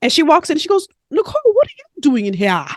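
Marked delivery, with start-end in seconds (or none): 1.1-2.7 bad, messy put-on Caribbean accent, sing-song. Quoting a woman who walks into the faculty lounge, in a bad Caribbean accent. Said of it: "I'm about to mess up her Caribbean accent".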